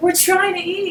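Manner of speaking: put-on dead-serious, high-pitched, fed-up furious outburst. Telling about a clip seen on TMZ, imitating the man being really mad. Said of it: "And he was like really mad".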